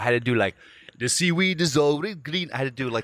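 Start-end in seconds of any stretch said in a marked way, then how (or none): 1.0-2.5 put-on Jamaican accent, higher. Retelling an audition for Sebastian from The Little Mermaid: fake Jamaican accent. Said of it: "You make it Jamaican?".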